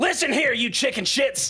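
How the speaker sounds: shouting in a character voice. Voicing a character who commands three yetis: in-character shout. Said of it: "I'm just gonna shout".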